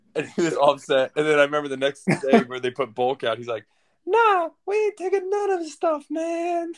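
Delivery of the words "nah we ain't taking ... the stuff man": very high-pitched, slow, drawn-out, dismissive tone. Retelling what the driver said the next day about the bulk, in a higher-pitched voice. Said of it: "the driver had like a higher pitched voice".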